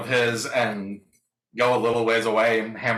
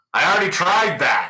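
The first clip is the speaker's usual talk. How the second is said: raised shout, pitched up; 7 semitones higher, 4 dB louder than usual. Playing a character shouting back through a portal. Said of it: "I shout back through the".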